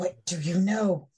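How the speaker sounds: whispered voice. Voicing a character who whispers into another character's ear: whispering. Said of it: "she just whispers in your ear".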